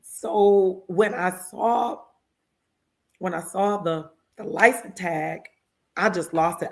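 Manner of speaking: very drawn out, slow, choked up, near tears. Speaker telling about a bill getting passed, choking up. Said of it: "I'm about to cry".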